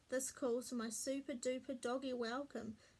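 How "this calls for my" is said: ordinary delivery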